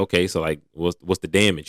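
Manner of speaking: normal talking voice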